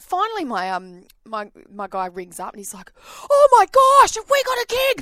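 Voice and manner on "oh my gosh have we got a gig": mock, very high, very loud, frantic panicked outburst. Retelling a phone call about a forgotten gig: imitating someone freaking out. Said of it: "freaking out".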